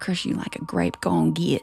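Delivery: fake Appalachian Southern American accent. Showing a friend from Sweden what Appalachian sounds like, in an Appalachian accent. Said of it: "That's Appalachian".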